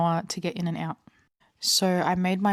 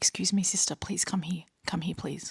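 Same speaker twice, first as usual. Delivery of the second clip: put-on whisper, quieter; 5 dB quieter than usual. Retelling how a store staff member called her over: imitating someone whispering. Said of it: "she's whispering at me and she's like".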